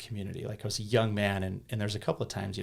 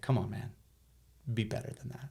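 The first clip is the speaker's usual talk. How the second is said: changed, quieter tone, not yelling; 4 dB quieter than usual. Speaker quoting how he was corrected without being yelled at, retelling his changed tone. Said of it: "his tone just totally changed".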